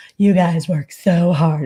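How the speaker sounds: loud, slow, fawning, ass-kissing suck-up voice. Speaker mimics Chody thanking police officers, imitating Chody's suck-up voice. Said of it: "his ass kisser voice".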